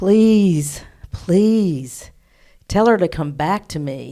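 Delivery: mournful, yearning, sad pleading voice. Retelling a voice heard while working on a client: imitating a longing, sad voice. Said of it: "longing voice, just so sad".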